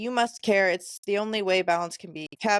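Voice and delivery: ordinary talk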